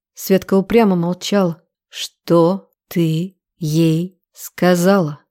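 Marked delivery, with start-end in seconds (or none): 1.9-5.1 slow, merciless growl, very drawn out. Narrator reads a man interrogating Svetka, who stays silent: ruthless growl. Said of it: "Безжалостно прорычал я".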